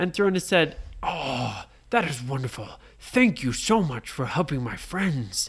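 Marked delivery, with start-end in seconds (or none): 1.0-5.5 storybook dragon character voice. Narrator reading a bedtime story, speaking as the red dragon: Thronus the red dragon voice. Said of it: "And they met [name], the red dragon. / [name] was asleep in his cave. / And he went".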